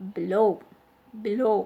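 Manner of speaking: below, stress on second syllable low. Showing learners how to say the word: stress on LOW in below. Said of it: "The stress is on the second part low".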